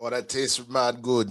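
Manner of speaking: put-on speaking in a Jamaican accent. Tasting a drink in the middle of a bit, in a jamaican accent. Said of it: "I gotta speak in a Jamaican accent until I kill this beer".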